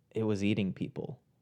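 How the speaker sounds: low, soft, flat monotone. Retelling what Marlena said: Marlena's low monotone. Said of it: "in a very like low monotone voice".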